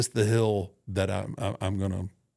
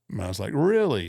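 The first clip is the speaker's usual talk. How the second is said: plain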